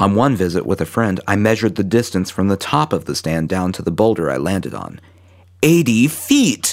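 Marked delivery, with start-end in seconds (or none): 5.6-6.7 excited, pitched-up voice. Reading their own written account aloud, ending on an excited exclamation. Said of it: "That's why I sound so excited".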